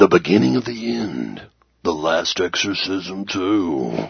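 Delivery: movie trailer announcer voice-over narration. Saying a sequel's movie title aloud in the movie trailer guy voice. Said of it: "even the trailer guy voice".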